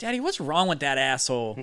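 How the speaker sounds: put-on small child's voice heard from the background. Voicing the driver's little kid in the background: voicing a little kid. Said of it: "you hear his little kid in the background".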